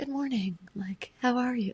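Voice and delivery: light floating voice. Imitating how a woman in the room talks, imitating her airy voice. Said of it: "Her voice is like".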